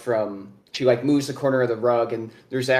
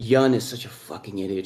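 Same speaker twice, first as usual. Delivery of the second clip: muttered under breath, lower pitch; 3 semitones lower than usual. Voicing a character in a game scene, muttered under her breath. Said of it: "She kind of says under her breath".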